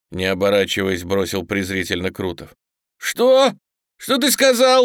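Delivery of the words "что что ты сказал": very high, shrill, drawn-out screaming yell. Narrator reads a man answering an insult as he draws a revolver: yelled. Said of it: "завопил Коган".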